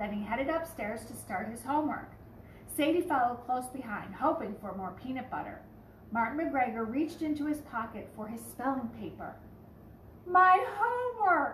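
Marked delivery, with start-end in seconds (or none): 10.3-11.5 shrill, very high, loud yelling. Racing back downstairs to the washer, a boy yells out; yelling. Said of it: "yelled [name] as he raced back downstairs".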